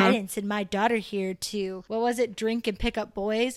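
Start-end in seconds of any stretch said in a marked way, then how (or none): none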